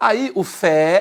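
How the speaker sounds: secondary stress on fé, drawn out slow, high, loud. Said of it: "passa a ser a subtônica".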